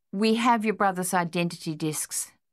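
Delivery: ordinary delivery, nothing marked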